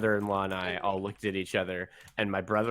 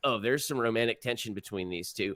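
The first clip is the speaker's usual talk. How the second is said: ordinary talk, nothing marked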